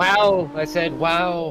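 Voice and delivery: loud, high, drawn-out "wow," sounding amazed. Imitating a named politician being very surprised: Donald Trump voice, very surprised. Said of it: "when he's, like, very surprised".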